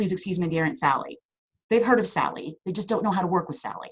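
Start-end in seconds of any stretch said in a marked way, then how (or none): none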